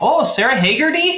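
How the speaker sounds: put-on thick Minnesota accent. Joking about how a name sounds: heavy Minnesota accent. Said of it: "pronounced by someone with a very heavy Minnesota accent".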